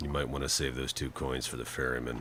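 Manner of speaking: low, quiet deadpan.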